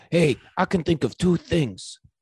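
put-on high-pitched cartoon schoolyard bully kid voice. Redoing an impression of a movie character's line, in a cartoon kid voice impression. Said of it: "Is this Nelson?".

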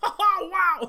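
little high, loud shout-scream, yelped.

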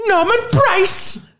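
very high, slow, drawn-out cartoon voice. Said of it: "watching a lot of Fireman Sam".

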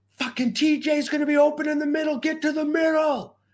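shrill, very high, urgent screaming. Retelling yelling to a player at the goal line, re-enacting his own scream. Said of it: "and I'm screaming".

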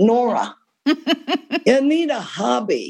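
put-on New York accent. A writer retells a call from Phyllis, the CEO of Putnam, in Phyllis's New York accent. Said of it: "in that New York accent".

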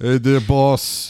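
loud, put-on Italian accent, played as a bit. Greeting the other speaker: put-on Italian voice. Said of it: "I became Italian".

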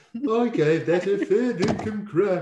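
slow, high, drawn-out royal voice. Saying the slang phrase as the Queen: Queen impression. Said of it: "I don't think the Queen would ever say fair dinkum".

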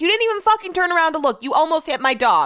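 put-on, fired-up, very high angry yelling. Retelling what she shouted at a woman who almost hit her dog, retelling her own yell. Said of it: "you don't need to be yelling at me".

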